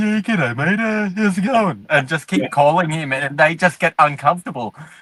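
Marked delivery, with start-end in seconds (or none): 0.0-1.8 weird, odd, awkward voice, pitched up. Retelling a prank call to a friend's mate: imitating own weird awkward prank-call voice. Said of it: "do that weird, awkward sound".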